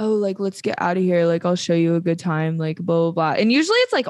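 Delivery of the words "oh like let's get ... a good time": put-on cocky male tone. Retelling how a man comes up, chest out: imitating a cocky man. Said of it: "that kind of cockiness".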